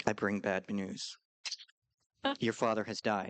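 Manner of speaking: put-on wooden, stiff, low monotone, as if reading. Criticizing an actor's delivery of bad news, imitating a stiff monotone. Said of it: "gives it in like a very like monotone".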